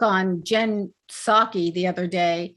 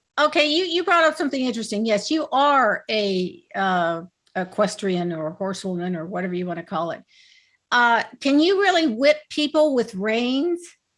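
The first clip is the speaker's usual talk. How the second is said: plain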